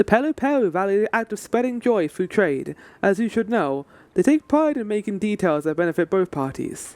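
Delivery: put-on Icelandic accent with careful cadence. Reading a game character's dialogue aloud: Erenville's Icelandic accent. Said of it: "trying to get down Erenville's cadence".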